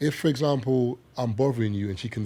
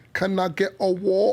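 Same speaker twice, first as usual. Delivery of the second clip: exaggerated fake British accent, very high-pitched; 9 semitones higher, 4 dB louder than usual. Showing how Americans exaggerate when imitating the UK accent: exaggerated fake UK accent. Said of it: "Americans imitate the UK accent, you proper like exaggerate".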